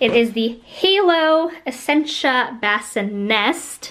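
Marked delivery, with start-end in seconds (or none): 2.6-3.9 Bassinest with final syllable nest strongly stressed. Introducing the Halo Bassinest bassinet, stress on nest in Bassinest. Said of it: "I accentuate the nest".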